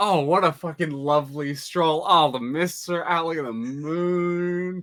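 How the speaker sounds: delighted, carefree tone. Playing a character strolling through misty streets at night: delighted, enjoying the stroll. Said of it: "absolutely enjoying themselves right now".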